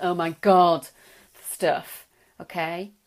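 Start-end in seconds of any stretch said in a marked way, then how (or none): 0.0-0.9 put-on acted, very loud teenage groaning. Imitating the teen woken up in the morning: imitating a teen groaning. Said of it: "she can just grunt and groan".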